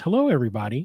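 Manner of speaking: put-on little girl's voice. Telling of a child's voice coming over the walkie radios, imitating a little girl's voice. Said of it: "it's a little girl's voice".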